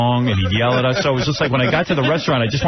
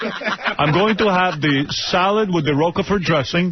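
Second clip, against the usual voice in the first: put-on Transylvanian-sounding old-world accent; 6 semitones higher than usual. Retelling how a father ordered at a restaurant: imitating father, foreign-sounding accent. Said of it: "he's like Dracula".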